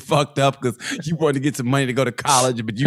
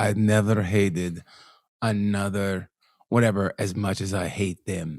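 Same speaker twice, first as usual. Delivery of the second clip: put-on low, soft, slow woman's voice. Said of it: "imitating her voice".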